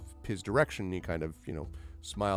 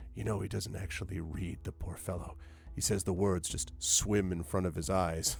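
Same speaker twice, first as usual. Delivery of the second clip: put-on hushed, lowered voice, much quieter; 7 dB quieter than usual. Telling a listener what another man says: retelling in a lowered voice. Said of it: "he kind of lowers his voice".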